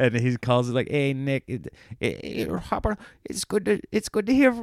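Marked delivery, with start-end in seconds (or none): 0.9-4.6 put-on stupid, dumb, pitched-up voice. Imagining a call from Adam Sandler, doing a stupid Adam Sandler impression. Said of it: "this stupid impression".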